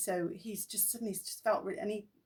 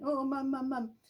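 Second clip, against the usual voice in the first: mock terrified, panicked screaming, pitched high; 5 semitones higher, 3 dB louder than usual. Retelling how their dad reached his front door and called his mum, retelling a terrified scream.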